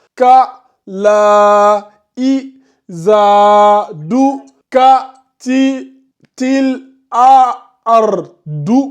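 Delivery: very slow, one syllable at a time. Advice on learning to read, sounding it out slowly, syllable by syllable. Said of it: "lisez lettre par lettre ... Doucement, petit à petit".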